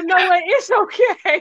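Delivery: high, mock consoling cooing voice. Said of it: "And they're like".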